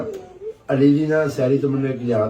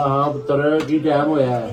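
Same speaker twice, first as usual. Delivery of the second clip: usual speaking voice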